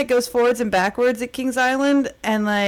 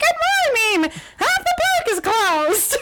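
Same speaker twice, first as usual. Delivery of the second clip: "good" pitched way up and stretched out; 13 semitones higher than usual. Recalling a childhood phone call, a speaker quotes it in a Mickey Mouse voice. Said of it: "Mickey Mouse was like".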